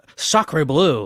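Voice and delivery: put-on French-accented exclaiming. Podcast host tries out the intro line he planned for this episode, in a mock French accent. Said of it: "Feeling a little French".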